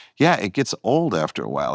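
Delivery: normal talking voice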